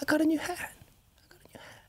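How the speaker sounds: almost whispered, soft, hushed, barely voiced. Doing the requested Biden voice: Biden almost whispering. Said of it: "He almost whispers".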